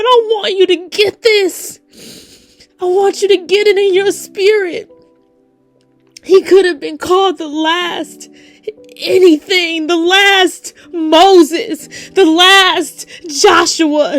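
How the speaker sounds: tearful, crying while speaking. Preaching to listeners, crying while speaking. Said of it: "I know I'm crying".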